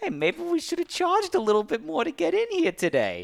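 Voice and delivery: snide, snarky, very high-pitched voice. Retelling how a woman with a food tray ran up and spoke, retelling a snarky remark. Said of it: "she she says snarkily".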